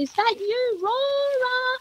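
very high, drawn-out yell. Halfway up the mountain, calling out for Aurora, retelling a yell. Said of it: "I'm yelling out".

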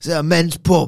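put-on Cockney accent. Quoting a wrestler's line about the venue, Cockney accent. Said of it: "I was gonna go Cockney there".

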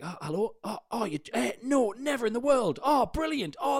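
put-on chatty patter. Retelling how the comic pretended to answer a ringing phone: imitating comic's fake phone call. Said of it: "he pretended his phone was ringing".

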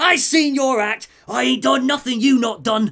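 very high, loud, shrill Cockney outburst. Voicing Penguin catching his breath after being thrown: Penguin in Cockney accent. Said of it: "As Penguin catches his breath, he's like".

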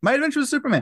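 very fast, very high-pitched rushed blurt. Speaker naming the show they're discussing, said really fast. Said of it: "I said that really fast".

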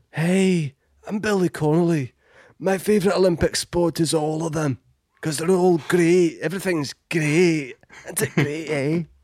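very high, slow, drawn-out celebrity-style voice. Doing a celebrity giving an Olympic opinion: Billy Connolly impression. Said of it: "one more celebrity who wants to give their Olympic opinion".

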